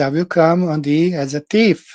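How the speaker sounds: normal talking voice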